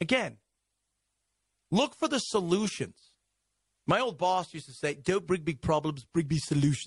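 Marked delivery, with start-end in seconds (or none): 4.9-6.9 put-on English-accented speech. Quoting an old boss's saying, in an English-sounding impression of him. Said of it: "Was that an English accent?".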